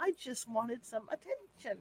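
very soft, hushed, fairy-like voice. Recreating the voice heard during a spirit investigation: fairy-like voice. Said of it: "Like that. Almost like a fairy".

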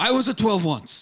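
put-on odd, almost French accent. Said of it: "At times he almost sounds French also".

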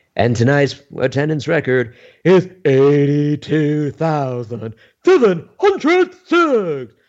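high, swooping announcer voice with a lilt. Retelling reading an attendance announcement back to Vince: imitating Howard's announcer voice. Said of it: "I had Howard's voice".

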